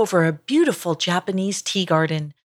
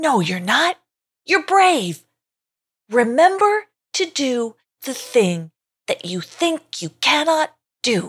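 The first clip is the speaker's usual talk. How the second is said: high storybook bird voice; 6 semitones higher than usual. Narrator reading a story aloud, the bird answering as he flies away: voice of a bird. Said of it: "One of the birds turned to him and said, / said the bird as he flew away".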